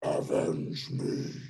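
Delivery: eerie, ghostly, spectral voice from beyond the grave. Speaking as someone's removed kidney, in a ghostly voice. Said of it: "a ghostly voice".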